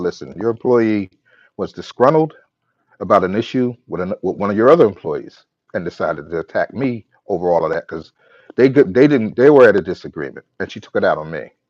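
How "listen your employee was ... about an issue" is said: ordinary delivery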